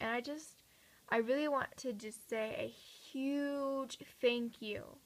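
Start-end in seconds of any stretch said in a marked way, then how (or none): 3.1-4.8 "huge" stretched out slow and very emphatic. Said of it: "like, capital letters".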